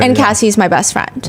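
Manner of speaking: plain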